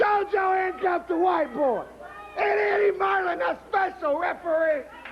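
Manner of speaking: outraged, angry, indignant shouted rant.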